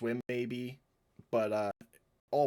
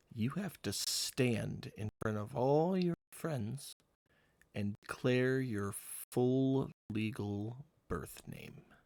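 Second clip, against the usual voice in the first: hushed whispering. A character leans in real close to another character, whispering. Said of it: "and whisper".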